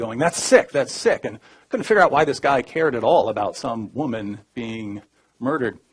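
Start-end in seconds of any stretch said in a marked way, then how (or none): 0.2-1.2 play-acted yelling, high and loud. Retelling how a guard reacted to a remark: imitating a guard yelling. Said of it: "he starts yelling at me".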